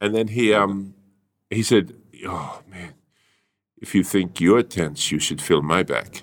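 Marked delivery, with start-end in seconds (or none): 2.3-6.2 put-on English with German accent. Retelling what the person giving a massage said: imitating a German accent. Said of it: "why was he putting on a German accent".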